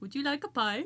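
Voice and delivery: put-on Indian accent. Urged by friends to do an accent, one delivers a single line in a mock Indian accent. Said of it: "I could say one line in Indian".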